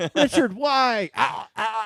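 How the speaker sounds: high, drawn-out, strangled fake choking gasps. Acting out a joke scene of being force choked: pretending to be force choked. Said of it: "you can pretend to be force choked".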